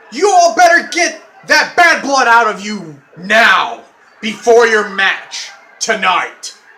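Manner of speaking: loud, swooping angry scolding. Having called in security, the speaker scolds Corey and Don before their match, angry voice. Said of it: "I hate using my angry voice".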